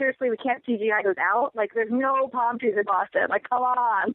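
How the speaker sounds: ordinary talk, nothing marked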